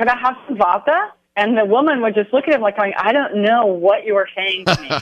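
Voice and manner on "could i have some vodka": put-on polite, pitched-up, non-American foreign accent. Retelling a fancy band dinner where Michael kept asking a woman: imitating Michael's accent. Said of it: "He kept saying".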